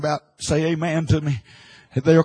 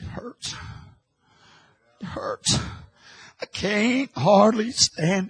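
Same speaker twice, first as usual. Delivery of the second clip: weak, faint, feeble, breathy whisper; 4 semitones higher, 4 dB quieter than usual. Retelling what a man of God down south said, imitating a feeble voice. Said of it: "in a feeble voice".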